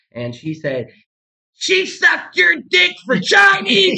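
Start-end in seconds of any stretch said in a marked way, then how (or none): 1.5-4.0 very high, piercing, shrill, loud scream. Retelling a woman screaming at her boyfriend while hitting him: retelling a woman screaming. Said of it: "she's screaming at her boyfriend".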